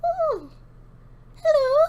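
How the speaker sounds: tiny, shrill feminine voice, squeaked high and loud. Voicing a voice the player hears in their mind after spores shower them, very tiny feminine voice. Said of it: "you hear a very tiny feminine voice".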